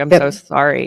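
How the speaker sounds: put-on crying, tearful voice. Retelling a witness's words after she started crying: imitating someone crying. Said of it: "she just started crying".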